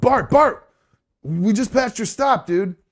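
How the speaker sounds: urgent, high-pitched voice. Retelling waking a sleeping guy on the bus, retelling an urgent wake-up. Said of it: "I wake him up real quick, and I'm like".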